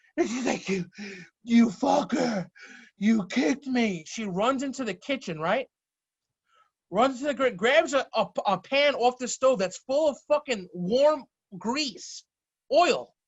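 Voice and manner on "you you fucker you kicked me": gasping, winded, out-of-breath stammer. Retelling a sister knocked breathless by a kick: imitating someone winded. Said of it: "knocks the wind out of her".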